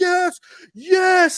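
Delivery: mock very high, shrill, top-of-lungs scream. Retelling the moment a driver's title win was announced, retelling a scream. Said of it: "I literally screamed to the top of my lungs".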